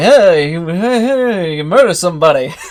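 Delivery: put-on old-fashioned accent. Correcting a co-host on how those people talked, in a put-on old-timey accent. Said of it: "It's more like".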